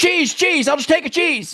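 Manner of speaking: mock very high, flustered, panicked voice. Recounting being rushed to order while others ordered over them: retelling panicked ordering. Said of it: "I just panicked".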